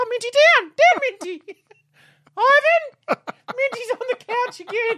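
very high, very loud, shrill scolding shriek. Slipping into Mum's voice in the middle of a bit: imitating Merle. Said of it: "It was the voice".

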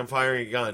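ordinary talk, nothing marked

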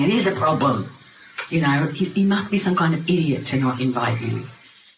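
ordinary talk, nothing marked

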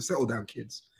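put-on posh head schoolteacher tone. Describing playing a head teacher role, speaking in a posh head teacher voice. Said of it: "I put on my posh head teacher voice".

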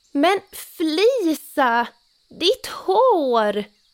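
startled, alarmed, frightened cry, loud and high-pitched. Narrator reads pappa seeing Flisa's hair grow, a frightened cry. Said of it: "Ropade pappa förskräckt".

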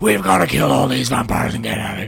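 very loud, rough, aggressive barked-out shout.

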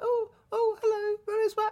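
little, very high, slow squeaky voice. Recounting people not understanding, saying a line in a high squeaky voice. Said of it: "I feel like I've got a little like squeaky voice".

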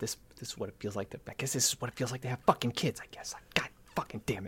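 hushed, whispered grumbling mutter under the breath. A game player voicing Max, who mutters to himself, muttering to himself. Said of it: "Max kind of mutters to himself".

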